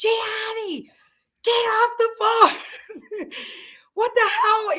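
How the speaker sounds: acted-out high, drawn-out screaming. Speaker retells shouting from the window at a man on a mower, retelling a scream. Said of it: "I'm screaming outside the window".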